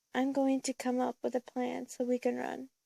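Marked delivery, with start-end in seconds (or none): none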